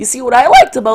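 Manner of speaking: voice cracking mid-sentence. Speaker ranking games, introducing number six, voice cracking. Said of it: "my voice cracked".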